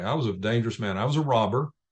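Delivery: calm, even, steady delivery. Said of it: "said it real calmly".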